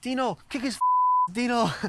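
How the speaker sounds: put-on loud, very high-pitched Italian accent. Retelling what a player's dad shouted from the stairs at a hockey fight: imitating an Italian accent. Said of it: "in his Italian accent".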